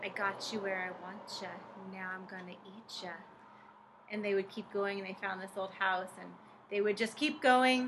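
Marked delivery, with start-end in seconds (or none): 0.0-3.1 hushed, creepy, spooky ghost-story voice. Retelling a childhood ghost story, the voice kids heard in the forest, creepy ghost-story voice. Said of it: "they heard this creepy voice saying".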